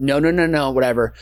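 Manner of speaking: usual speaking voice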